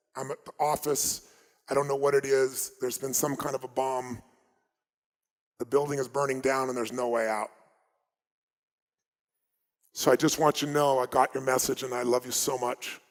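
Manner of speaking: normal talking voice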